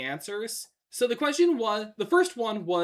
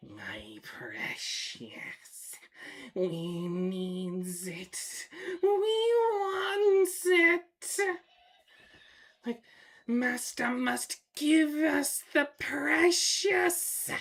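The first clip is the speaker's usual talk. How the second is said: very slow, drawn-out creature voice, swinging pitch; 7 semitones higher than usual. Showing off impressions, the speaker does a Gollum impression. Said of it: "I could do a good Golem".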